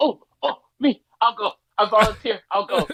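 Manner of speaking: mock keen schoolkid voice, eager and drawn-out. Retelling a character eagerly volunteering for the next battle: imitating an eager kid volunteering. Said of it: "boy got his hand up like his field trip".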